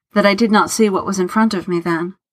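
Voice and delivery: ordinary talk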